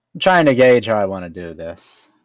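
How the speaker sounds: usual speaking voice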